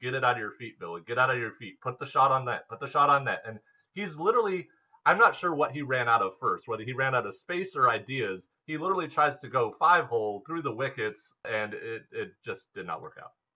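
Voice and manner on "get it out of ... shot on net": usual speaking voice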